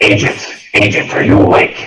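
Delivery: loud, eerie, ghostly spooky voice. Game master voicing a voice that wakes the sleeping agents, spooky voice. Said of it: "Spooky voice".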